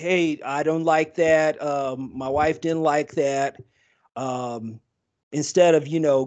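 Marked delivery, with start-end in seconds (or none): none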